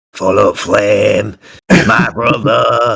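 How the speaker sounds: put-on Yorkshire barbarian voice. A player voicing their barbarian character, in a Yorkshire beefcake voice. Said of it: "That Yorkshire beefcake voice comes out".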